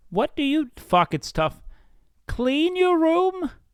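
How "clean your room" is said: put-on lecturing voice, higher. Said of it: "Every time I do a Jordan Peterson impression".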